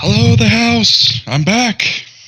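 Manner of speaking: very high, shouted, called out. Playing a character returning home on a cart, waving a spear: shouting a greeting. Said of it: "waves his spear above his head and shouts".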